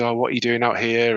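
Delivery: ordinary talk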